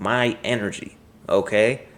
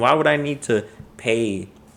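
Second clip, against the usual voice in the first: usual speaking voice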